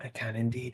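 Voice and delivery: speaking in a whisper. Answering whether the others can hear, whispering. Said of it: "are you whispering because it's".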